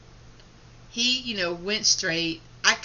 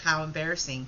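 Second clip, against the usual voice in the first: plain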